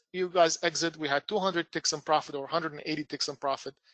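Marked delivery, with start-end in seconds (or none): none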